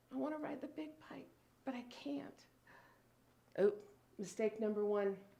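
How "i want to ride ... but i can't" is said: put-on timid, fearful little-child voice, much quieter. Recalling wanting to ride a big bike as a small child, imitating scared three-year-old self. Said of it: "trepidation in my little three-year-old voice".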